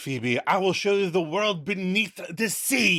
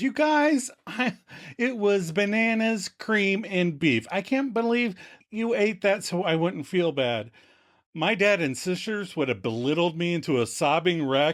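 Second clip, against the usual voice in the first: ordinary talk, nothing marked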